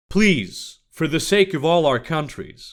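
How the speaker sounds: ordinary delivery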